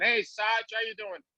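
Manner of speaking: put-on casual, relaxed Boston accent. Recalling how others greeted him by his nickname, imitating a Boston accent. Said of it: "calling me Saj with a Boston accent".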